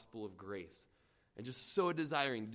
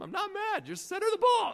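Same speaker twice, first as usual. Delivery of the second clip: mock shrill, booming, very loud and high, apologetic; 10 dB louder than usual. Retelling yelling at teammates during a game, acting out apologizing to the team. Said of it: "I'm like apologizing to my team".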